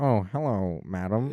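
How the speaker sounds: nerdy, dorky, gallant gentleman voice. Mocking a dorky Redditor who tips his fedora: mocking dorky fedora guy. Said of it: "tip fedora, be like".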